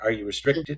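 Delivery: normal talking voice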